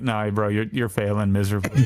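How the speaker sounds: ordinary talk, nothing marked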